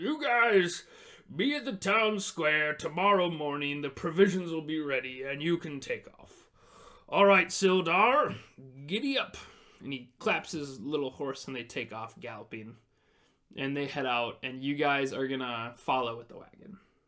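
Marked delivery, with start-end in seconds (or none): 0.0-9.4 loud, raised dwarvish character voice. A game master voicing a dwarf speaking to the players, in a dwarf voice. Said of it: "Dwarves would talk like this".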